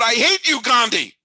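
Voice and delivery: acted-out loud yell. Recalling being ten when E.T. lost Best Picture: retelling a yell. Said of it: "And I yelled out loud".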